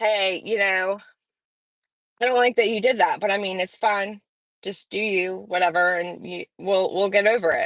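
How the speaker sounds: ordinary talk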